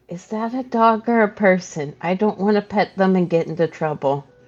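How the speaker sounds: whispering in character. Voicing a character whispering to a companion: whispering in character. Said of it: "Oswald is going to whisper to Wayland".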